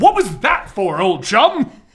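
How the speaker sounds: baffled, bewildered, completely confused tone. Voicing a confused Batman asking the one who slapped him: confused Batman voice. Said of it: "Batman is very confused".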